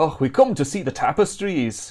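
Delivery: put-on Scottish accent. Looking at tapestries, quoting a movie line: mock-Scots Indiana Jones voice. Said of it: "with an actual Scots accent, but I'm taking off Indiana Jones".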